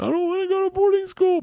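very high, tearful, crying, pleading voice. Retelling a daughter's reaction to boarding school threat: imitating a child crying. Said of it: "Georgia starts crying, going".

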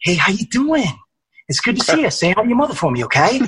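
put-on high-pitched, heavily laid-on Boston accent. Showing the Mark Wahlberg voice done with a brother: Mark Wahlberg voice. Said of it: "Mark Wahlberg voice would be like".

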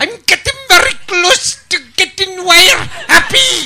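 put-on very high and loud Scottish accent. Imitating the guy who plays Ives in The Great Escape: Ives voice, Scottish accent. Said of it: "doing a stupid Scotch accent".

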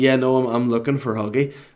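ordinary delivery

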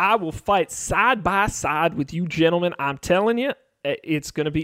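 poor, weak put-on Southern accent. Asked to promise to fight by the group's side, a character answers in a bad Southern accent. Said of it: "Now he's Southern".

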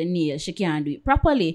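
normal talking voice

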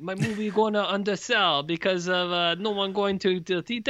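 put-on French-Canadian accent. Speaker voicing Denis Villeneuve complaining, in a Denis Villeneuve French-Canadian accent. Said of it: "Was that a flawless Canadian-French accent?".

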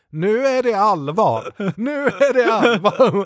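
stiff, high, official-sounding speech with wrong word stresses.

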